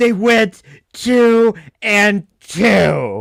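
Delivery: very slow, loud, contemptuous disgust, drawn-out "two". Retelling how an arguer said the line: imitating Ryan's disdain and disgust. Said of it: "he says it with such disdain and disgust".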